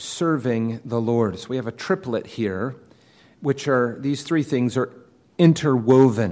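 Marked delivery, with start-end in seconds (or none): 0.0-1.4 slow, weighty emphasis on the word "serving". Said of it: "The emphasis falls on the last, serving the Lord".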